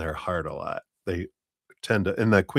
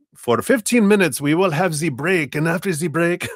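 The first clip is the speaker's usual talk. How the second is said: very high, loud put-on German accent; 10 semitones higher, 6 dB louder than usual. Describing an overplanned vacation, the speaker slips into a german accent. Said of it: "that's my German accent".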